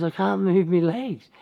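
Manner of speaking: high, play-acted laughing through the words. Retelling what someone laughing in bed said: imitating someone giggling. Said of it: "and giggling".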